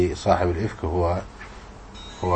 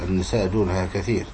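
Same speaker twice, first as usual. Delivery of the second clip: usual speaking voice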